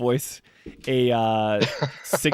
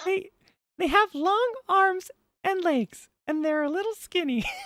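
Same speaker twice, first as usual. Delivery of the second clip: soft, very high squeaky cartoon voice; 5 dB quieter than usual. Speaker attempts a take of a character voice, sounding like Mickey Mouse. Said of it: "I just sound like Mickey Mouse".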